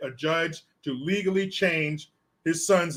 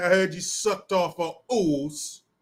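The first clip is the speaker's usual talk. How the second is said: put-on London Cockney accent. Trying out one of the other side's sayings, in a Cockney accent. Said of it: "Would that be that Cockney accent".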